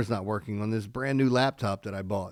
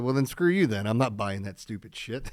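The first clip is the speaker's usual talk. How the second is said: usual speaking voice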